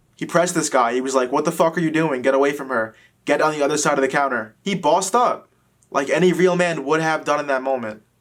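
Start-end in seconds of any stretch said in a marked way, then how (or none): none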